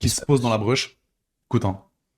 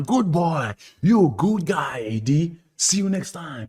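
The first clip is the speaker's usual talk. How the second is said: fake American accent, very slow and drawn out; 14 semitones higher than usual. Cheerfully recounting a story to a friend, quoting a cheering crowd's send-off, in a put-on american accent. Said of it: "Avec l'accent américain".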